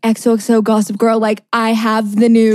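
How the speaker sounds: normal talking voice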